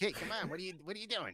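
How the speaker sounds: very high, high-energy character voice. Explaining how he found a voice for Skelly, demonstrating the Skelly character voice. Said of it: "that voice kind of meets".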